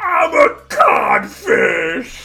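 very high, loud, pirate-style voice. Quoting a line from animated Peter Pan: Captain Hook impression. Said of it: "That's Captain fucking Hook".

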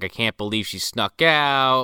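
acted, mock pissed-off anger. Describing a film scene, voicing the family at the Madea house, mock-angry retelling. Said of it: "all pissed off".

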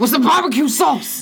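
put-on furious voice, very high-pitched and loud. Retelling a YouTube video where a man complains about Chick-fil-A: imitating a mad man. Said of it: "he's so mad".

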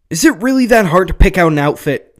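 sharp, very loud, high-pitched, irritated snap. Narrating a roommate looking up from her book at her friend, snapped. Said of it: "Sam snapped".

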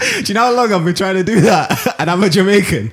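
high, loud, laughing, praising tone.

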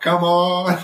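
slight southern drawl. Imitating a man's catchphrase, done in a slight southern accent. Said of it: "because he's got a little southern accent. He's like".

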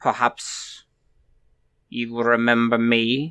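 put-on light German accent. Game narrator voicing one of two squid-faced monsters, in kind of a German accent. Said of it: "speaks in kind of a German accent".

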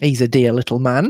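plain

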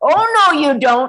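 very loud, slow, drawn-out lion roar. Retelling chasing the cat down the stairs, retelling a lion-like roar. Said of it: "I roared like a lion".

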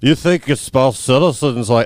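put-on drunk old Irish man voice. Discussing a film's odd accents, a speaker quotes Fitzy in a terrible Fitzy impression. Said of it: "That's a terrible impression of him".

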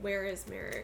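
normal talking voice

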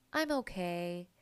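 put-on sad voice. Retelling her reply when asked how she's doing, imitating a sad voice. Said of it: "she gives him with this sad voice of".

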